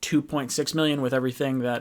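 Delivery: normal talking voice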